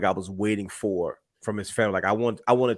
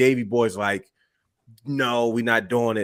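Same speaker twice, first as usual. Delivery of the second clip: plain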